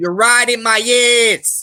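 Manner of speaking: put-on thick Boston accent. Quoting a player from Boston in an online racing game, super Boston accent. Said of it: "like a super Boston accent".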